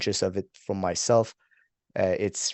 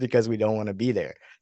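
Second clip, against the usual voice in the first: plain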